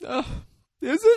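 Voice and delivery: very high, loud voice, overcome with emotion. Retelling a movie scene, answering a dead man: imitating someone getting emotional. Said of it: "getting emotional".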